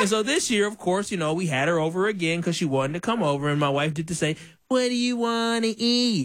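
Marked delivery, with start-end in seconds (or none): 4.7-6.3 slow, mocking delivery. Man imitating his wife texting the girl who came over, mocking imitation of wife. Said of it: "You're mocking your wife like that?".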